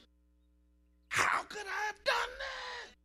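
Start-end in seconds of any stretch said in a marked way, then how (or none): 1.1-2.9 very high, raw, crying scream of anguish. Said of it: "He screamed out in anguish".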